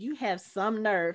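ordinary delivery

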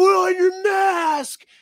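very high, shrill, dragged-out yell. Retelling a stranger shouting across a tire store: imitating a man yelling. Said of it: "some guy across the goddamn tire store was like".

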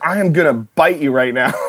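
mild, restrained, threatening half-yell. Retell her immediate reaction to what you told her while she was biting, retelling her yell. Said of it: "she yelled at me".

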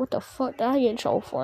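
whispered quietly under the breath. Retelling what he said after they both got in trouble: imitating a whisper. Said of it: "he was whispering".

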